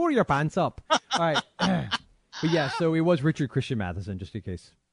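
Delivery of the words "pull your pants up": put-on Irish-accented voice. Voicing the Lord in a joking bit with a co-host, the Lord in an Irish accent. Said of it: "Why am I turning Irish?".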